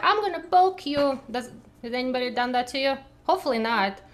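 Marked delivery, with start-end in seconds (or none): 0.0-1.2 mock taunting child voice, higher pitch. Explaining how mean kids talk to someone: imitating a mean kid. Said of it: "kids can be kind of mean and they're like".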